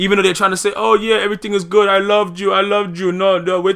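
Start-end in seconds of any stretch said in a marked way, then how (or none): 0.8-3.1 put-on Spanish-speaking accent. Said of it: "I just use that accent for no reason".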